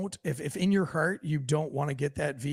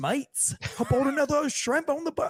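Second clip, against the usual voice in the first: jokey put-on Australian accent, pitched very high; 11 semitones higher than usual. Joking with a co-host before running ads, in a mock Australian accent. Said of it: "we would all be talking like this".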